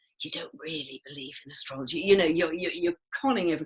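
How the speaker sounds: imitated conspiratorial whisper. Retelling what people said about astrology: imitating a conspiratorial whisper. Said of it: "say in a conspiratorial whisper".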